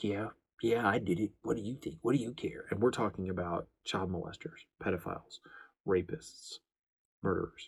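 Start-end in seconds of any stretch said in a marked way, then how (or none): 0.0-2.6 cocky, smug, arrogant, sneering defiant tone. Retelling how offenders leer up at officers: imitating a smug, arrogant criminal. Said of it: "smugly, arrogantly leering up at them like".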